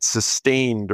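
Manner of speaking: the word sustained stressed and slowed down.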